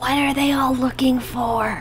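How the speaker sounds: whispering very loudly, as an aside. Leaning over to Celsus, the character asks in a loud whisper. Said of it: "whispers very loudly".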